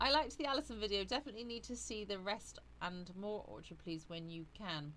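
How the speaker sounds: ordinary delivery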